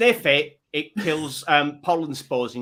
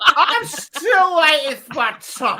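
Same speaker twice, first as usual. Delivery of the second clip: mock drunken slurring, higher and louder; 13 semitones higher, 6 dB louder than usual. Mocking another speaker's request for a drink: imitating a drunk-sounding slur. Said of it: "you sound like you're at the level where you're about to be cut off by the barman".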